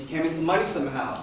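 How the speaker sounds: plain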